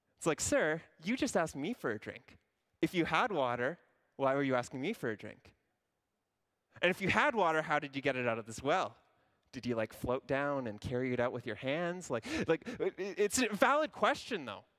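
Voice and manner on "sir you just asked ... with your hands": mocking, sassy, sarcastic tone. Paraphrasing the woman's reply to Jesus: sarcastic, sassy tone. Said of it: "I'm a very sarcastic and sassy person".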